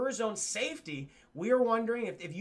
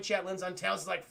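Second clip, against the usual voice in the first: ordinary delivery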